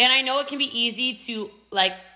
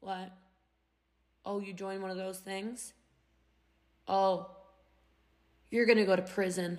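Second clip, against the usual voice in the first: put-on deflating tone, lower pitch, quieter; 3 semitones lower, 9 dB quieter than usual. Speaker telling the audience how people answer your excitement: imitating a dusty-sponge buzzkill. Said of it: "they come at you like a dusty sponge".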